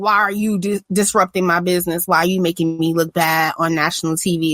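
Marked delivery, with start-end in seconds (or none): none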